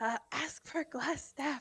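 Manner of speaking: whispered speech. Whispering to another player character to ask for glass staff: whispering. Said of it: "I'm gonna whisper".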